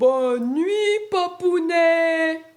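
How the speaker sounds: booming, very loud big-voice shout. Reading a bedtime story, three little frogs answering papa: shouting in a big voice. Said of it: "crient d'une grosse voix".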